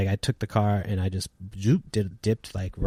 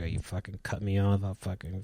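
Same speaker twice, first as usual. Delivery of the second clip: quieter, mumbled, muttered words; 6 dB quieter than usual. Retelling what a man said while walking behind: imitating someone mumbling. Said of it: "mumbling to himself".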